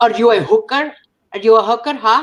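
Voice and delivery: odd put-on Indian, Pakistani, Filipino blended accent. Imitating her mom scolding her, in a weird Indian, Pakistani, Filipino accent. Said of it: "I went into this like weird Indian, Pakistani, Filipino accent".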